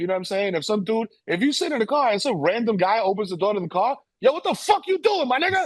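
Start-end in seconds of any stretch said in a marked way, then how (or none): 4.2-5.7 mock, shrill, very high, loud outburst. Showing how to react when a stranger opens the car door: loud, cursing. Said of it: "Like, like that".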